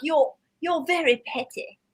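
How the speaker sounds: put-on British accent. Speaker quotes a friend who had a British accent, imitating a British accent. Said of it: "I had this friend with a British accent".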